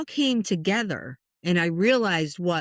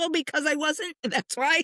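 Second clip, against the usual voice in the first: high, laughing through frustration. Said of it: "I know I'm laughing".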